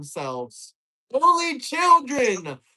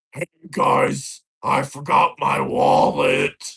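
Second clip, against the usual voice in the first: fake masculine put-on voice, slow; 9 semitones lower than usual. Mocking the other speaker's words about a wallet: put-on man voice. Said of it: "When is his man voice gonna come out?".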